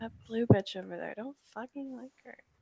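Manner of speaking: hushed, half-whispered stage whisper, close to ear. Kelly leans over to Neppy while walking and says a half-whispered insult. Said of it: "Kelly's gonna whisper to Neppy and be like".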